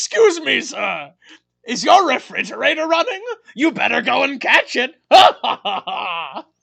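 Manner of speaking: hammy, very loud, sinister evil clown voice. Act out Pennywise showing up behind a screaming Randy, in a hammy Tim Curry Pennywise impression. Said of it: "Tim Curry as Pennywise shows up behind Randy and is like".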